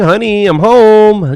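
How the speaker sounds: loud scream with "home" stretched out. Announcing being back home: screaming. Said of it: "I'm screaming".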